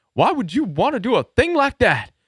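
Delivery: very high rural grandfather voice, pitched way up. Quoting his grandpa questioning him, in grandpa's real country voice. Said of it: "my grandpa had this real country voice".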